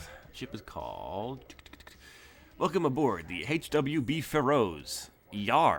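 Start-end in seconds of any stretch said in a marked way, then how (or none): 2.6-5.8 very slow, drawn-out pirate voice. Voicing an android greeter dressed like a pirate: pirate greeter voice. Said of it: "he's dressed like a pirate".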